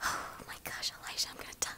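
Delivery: nervously overdramatic. Playing a multiplayer game, talking to a fellow player, dramatic and nervous. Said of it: "You're being dramatic because you're nervous".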